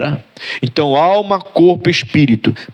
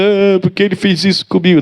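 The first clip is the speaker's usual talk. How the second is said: tearful, whiny crying voice; 4 semitones higher than usual. Retelling how he used to cry like a rebellious boy: imitating crying. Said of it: "Antes eu ficava chorando lá, igual um menino rebelde".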